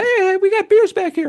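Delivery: very high-pitched man's voice. Act out the man greeting the band as they come off stage, imitating Shannon's really high voice. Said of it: "had a really high voice".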